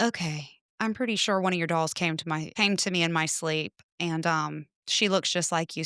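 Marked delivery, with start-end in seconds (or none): none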